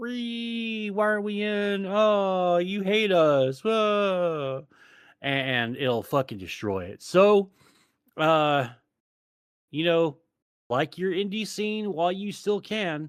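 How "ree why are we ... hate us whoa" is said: very drawn-out, slow, high screeching wail. Mocking people who will invade the indie scene: imitating undesirable screeching. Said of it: "fucking undesirable screeching".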